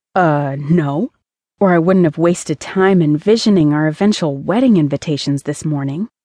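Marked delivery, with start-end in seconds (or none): none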